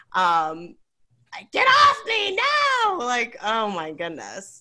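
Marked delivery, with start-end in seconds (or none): 0.2-3.0 very high-pitched, very slow, shrill, drawn-out scream. Retelling a woman screaming as she leaves the place, imitating her scream. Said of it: "she's screaming".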